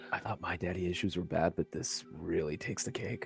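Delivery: whispering. Whispering back to the commodore curled around your neck, whispering. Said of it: "I'll whisper back to him like".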